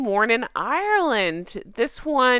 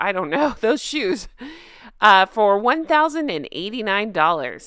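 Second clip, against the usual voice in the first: usual speaking voice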